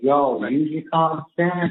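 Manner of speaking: fake folksy southern drawl. Retelling what she told everyone, in a put-on southern accent. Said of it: "put on the southern accent".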